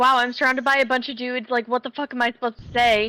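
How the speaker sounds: ordinary talk, nothing marked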